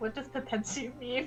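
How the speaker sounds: hushed whisper. A player in a tabletop game whispers a question to Nethy: whispering. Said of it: "I'm gonna whisper to Nethy".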